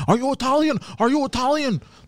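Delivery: high-pitched mock yell. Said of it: "he was yelling".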